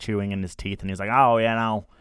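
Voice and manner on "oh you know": put-on country twang, louder. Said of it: "Twang to me is, like, a guy with overalls".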